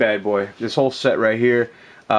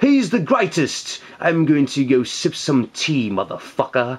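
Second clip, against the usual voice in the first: terrible put-on English accent; 3 semitones higher than usual. The speaker jokes about a comic book figure, in a bad English accent. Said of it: "That's my that's my English accent".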